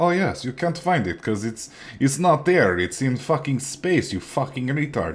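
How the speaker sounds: put-on offhand Russian accent. Retelling a reply from Lem about pig iron: Russian accent imitating Lem. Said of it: "I don't know why Lem is Russian in my head".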